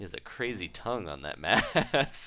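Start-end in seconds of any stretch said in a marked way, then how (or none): none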